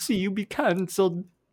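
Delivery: awful, very high, loud, squeaky cartoon Italian voice. Asked by the other speaker to do the Mario impression again, bad Mario impression. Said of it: "Can you do your Mario impression again?".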